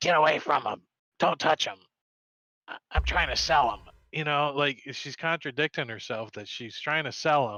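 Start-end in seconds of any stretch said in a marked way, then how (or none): 0.0-3.8 loud, sharp, snapping tone. Voicing a sick woman warning players off her goods: snapping at someone. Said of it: "she's like".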